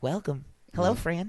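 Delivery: welcoming neighborly host voice. Showing the other speaker a Mister Rogers impression. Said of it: "that was a good Mister Rogers, right?".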